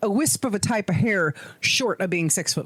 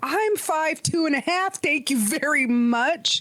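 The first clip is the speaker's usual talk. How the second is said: put-on acted cranky old man, angry, high and slow; 7 semitones higher than usual. Retelling own reply to being called short: retelling an angry retort. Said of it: "I was so angry".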